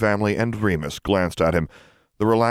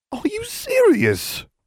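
very high hysterical squeak sliding up in pitch. Reading Ron's reaction to hearing about World Cup tickets; squeak, voice sliding up hysterically. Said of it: "Ron squeaked, his voice sliding up a hysterical octave".

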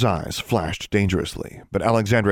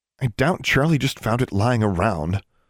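plain

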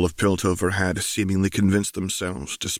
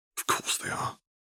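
dismissive scoff, much quieter. Answering the lieutenant's report, a woman scoffs back at him. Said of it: "Caitlin scoffed".

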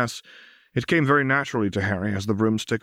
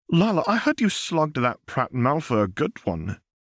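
high, swooping words spoken on a gasp; 5 semitones higher than usual. Narrating a story, Susan sits down with Harry and Lila, gasping. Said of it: "she gasped".

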